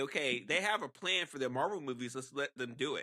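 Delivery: ordinary delivery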